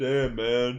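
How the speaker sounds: put-on dumb-sounding voice. Reading out an athlete's tweets to the others: mocking LeBron James voice. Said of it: "Why why reading it in that voice? Why make him sound stupid?".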